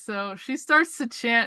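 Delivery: plain reading voice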